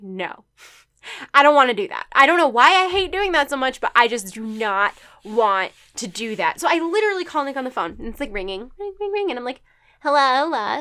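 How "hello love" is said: mock wheedling, sugary, sweet cute voice. Retelling phoning someone to ask a favor, greeting them in a put-on cute voice. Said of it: "because I'm doing my cute voice".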